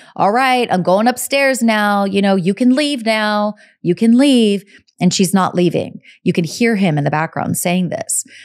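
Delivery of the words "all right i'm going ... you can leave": put-on Long Island accent. Quoting a client heard in the background, in a Long Island accent. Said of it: "You could hear him with his accent".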